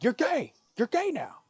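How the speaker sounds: piercing, shrill, very high-pitched yell. Joking about a bit where the line must be yelled, yelling. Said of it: "you have to yell".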